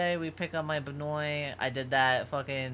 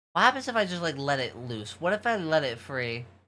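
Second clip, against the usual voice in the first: ordinary delivery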